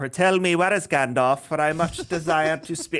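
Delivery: archaic, aloof elf-lord speech. Mocking how Celeborn talks, imitating Celeborn's way of talking. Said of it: "someone that talks like that".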